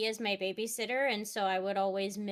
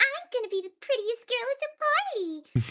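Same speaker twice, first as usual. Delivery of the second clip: very high, swooping, sing-song cartoon-girl voice; 6 dB louder than usual. Retelling a cartoon scene, mimicking everything the characters say: Bubbles impression. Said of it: "I loved sitting there mimicking everything that they would say".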